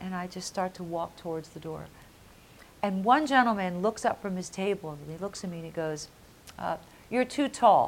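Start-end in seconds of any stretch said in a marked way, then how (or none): 7.1-7.9 acted cold, chilly tone, raised and high. Recounting an audition, quoting a gentleman at a table in a cold tone. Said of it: "In that cold kind of tone".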